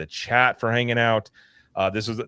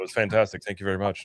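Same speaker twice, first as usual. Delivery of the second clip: flat, emotionless put-on voice, quieter; 4 dB quieter than usual. Imagining a director riding a ride and reacting: emotionless Chris Nolan imitation. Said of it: "no emotion".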